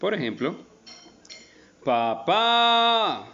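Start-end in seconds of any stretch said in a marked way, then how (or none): 1.8-3.2 papá with weight on final syllable pá. Spanish lesson on finding the stressed syllable: stress on last syllable pá. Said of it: "claramente tiene el acento en la última sílaba".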